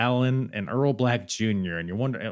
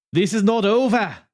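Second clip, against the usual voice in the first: very high, loud, bad put-on Italian accent; 10 semitones higher, 6 dB louder than usual. Retelling what Laura Di Matteo said on stage, in an Italian accent. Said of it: "this is my Italian accent".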